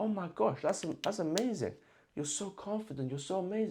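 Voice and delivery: overeager, gushing, overexcited, pitched high. Acting out a listener's reply in a demo conversation: overexcited listener. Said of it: "I'm carried away".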